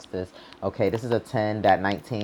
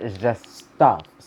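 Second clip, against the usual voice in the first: just stuff stressed, slow and loud. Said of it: "emphasis on it".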